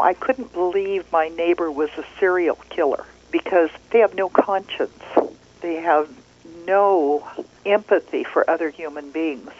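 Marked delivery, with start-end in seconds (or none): none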